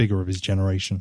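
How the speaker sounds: ordinary delivery, nothing marked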